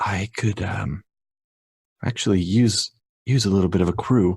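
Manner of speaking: offhand, understated, tentative, halting on "um". Voicing Shay asking for a crew once things cool down: very quietly. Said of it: "she says very quietly".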